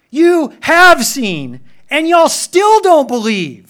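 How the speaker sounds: loud, slow, high-pitched delivery.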